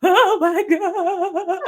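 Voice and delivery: acted, very high, loud sobbing, weeping outburst. Retelling listening to an audiobook in the gym corner: imitating own weeping.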